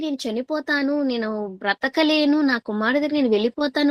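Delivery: ordinary delivery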